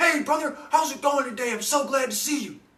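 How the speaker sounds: mock excited, very high, loud, buddy-like tone. Retelling how a man greeted the speaker: imitating Chuck's excited greeting. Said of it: "This is how he talks all the time".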